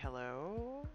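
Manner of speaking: very quiet, hushed, wary, paranoid voice. Role-player answering in character, paranoid-sounding. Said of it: "I'll be probably really paranoid sounding as I do".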